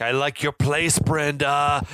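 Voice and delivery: very slow, creepy, unsettling psychopath voice. Retelling how a character snoops through her things: imitating a creepy psychopath. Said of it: "like a fucking psychopath".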